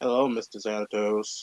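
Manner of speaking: low, deep, dead flat monotone. Recalling the voiced character Owen, in Owen's monotone voice. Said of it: "that was just so monotone. Like".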